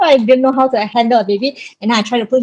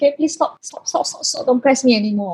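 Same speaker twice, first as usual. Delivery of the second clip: breathy, whispered pleading in pain; 6 dB quieter than usual. Retelling asking the nurse to stop pressing: retelling own plea in pain. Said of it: "But I was in a lot of pain".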